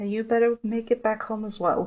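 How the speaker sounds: muttered half under the breath. Turning to walk away, she mutters it half quietly, hoping not to be heard. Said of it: "she mutters, mm, half quietly".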